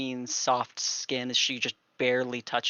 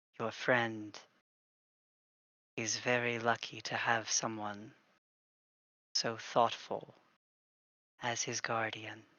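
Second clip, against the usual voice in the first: kind, tender, soft and gentle voice; 2 semitones lower, 6 dB quieter than usual. A storyteller voices someone speaking to the player character: gentle voice. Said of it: "You hear gently".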